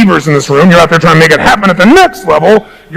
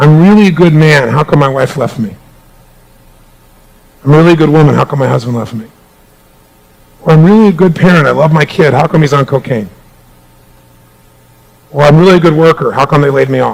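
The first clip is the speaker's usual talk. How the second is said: put-on teary emotional voice, lower; 4 semitones lower than usual. Retelling what people ask about being good but losing out: imitating someone teary-eyed. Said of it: "they get teary-eyed or emotional".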